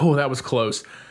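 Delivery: ordinary delivery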